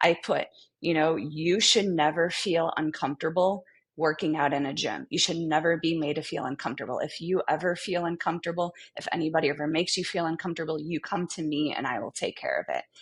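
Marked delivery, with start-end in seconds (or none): none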